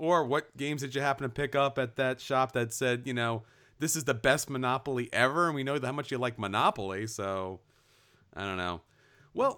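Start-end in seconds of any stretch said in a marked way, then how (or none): none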